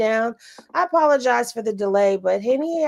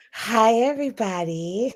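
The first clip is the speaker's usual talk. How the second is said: fake seductive voice. A show co-host greets everybody in a sexy Marilyn Monroe voice. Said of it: "Did she just put on the sexy voice?".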